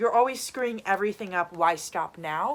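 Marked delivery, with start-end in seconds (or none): none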